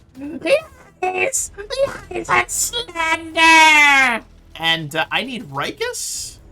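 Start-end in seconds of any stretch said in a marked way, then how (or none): 0.2-4.3 tiny squeaky voice, very high and slow. In a tabletop game, the player voices Rex's reaction: small squeaky Rex voice. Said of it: "you hear this small, squeaky voice".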